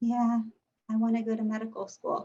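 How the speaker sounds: bored, flat, unconvincing, unenthusiastic delivery. Showing how an interviewee should not sound: bored, unconvincing tone. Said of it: "you sound and look like this".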